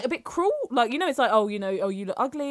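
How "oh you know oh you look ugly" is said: usual speaking voice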